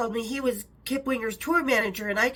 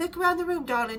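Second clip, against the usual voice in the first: put-on tiny, high, light voice with English accent; 5 semitones higher than usual. Retelling a phone call from Sharon Osbourne: imitating Sharon Osbourne's English voice. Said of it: "a tiny little English voice".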